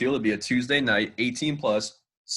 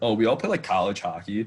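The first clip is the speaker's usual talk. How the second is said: usual speaking voice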